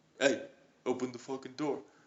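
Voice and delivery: put-on Italian tough-guy voice and accent. Retelling how Jimmy Jones knocked on the door: Jimmy Jones impression. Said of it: "Sick Jimmy Jones impression".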